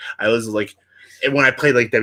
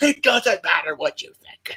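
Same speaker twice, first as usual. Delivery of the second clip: high, worked-up, dismissive voice, fired back; 8 semitones higher than usual. Retelling interviews where The Rock answers, imitating The Rock freaking out. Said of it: "freaking out about everybody".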